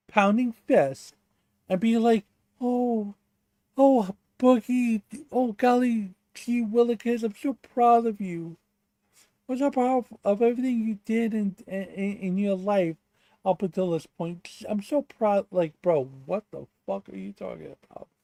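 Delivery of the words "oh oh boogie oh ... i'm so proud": fawning, syrupy, high-pitched gushing. Ranting about a visit to Boogie's driveway, mocking Peapod's gushing flattery. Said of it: "you are glazing Boogie more than".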